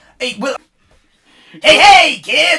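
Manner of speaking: booming, very loud, high-pitched put-on clown voice. Doing an impression in a voice game, clown voice. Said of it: "That's not bad. The laugh kinda went a little bit Joker".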